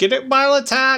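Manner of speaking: put-on very high, old-time newsboy street hawking cry. Joining in on another speaker's paperboy bit, newsy voice. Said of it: "That's your newsy voice?".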